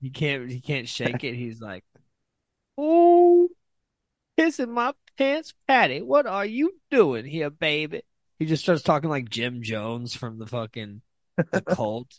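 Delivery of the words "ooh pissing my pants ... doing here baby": very high, very loud church-lady voice, exclaiming.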